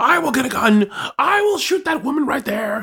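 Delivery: mock screaming in a high-pitched felt-puppet voice. Recounting a trial, retelling a man's courtroom outburst in Muppet-like screaming. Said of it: "I know I sound like a Muppet".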